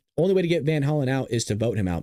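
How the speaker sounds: ordinary delivery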